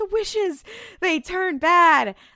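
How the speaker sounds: mock yelling, high and drawn-out. Retelling a scene where Dean yells through a bathroom door: imitating Dean yelling. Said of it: "he's yelling to Sam".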